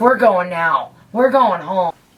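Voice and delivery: pissed-off, angry voice. Retelling a Thanksgiving when mom found beer: imitating an angry mom. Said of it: "my mom was so pissed off".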